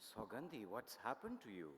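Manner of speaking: very subdued tone. Reading a story aloud, a frightened man questions a woman: very subdued tone. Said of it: "in a very subdued tone".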